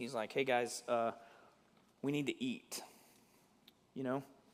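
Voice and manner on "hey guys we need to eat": gentle, slow, level-headed, reasonable tone. Telling the story of the ship in the storm, Paul's gentle voice of reason. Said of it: "This just gentle voice of reason".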